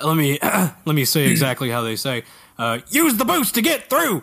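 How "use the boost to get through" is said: put-on high-pitched Texan accent. Quoting a game character's advice exactly, the speaker does Peppy's space Texas accent. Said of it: "what is that accent though?".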